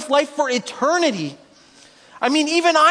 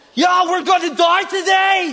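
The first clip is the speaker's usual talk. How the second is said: rousing, shouted battle war cry. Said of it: "and Ellie's like".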